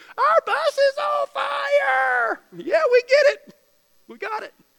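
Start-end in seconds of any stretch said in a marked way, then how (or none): 0.2-2.4 very slow, high, drawn-out scream at full volume. Retelling a woman running out during a bus fire, mock-screaming at the top of her lungs. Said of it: "she's screaming at the top of her lungs".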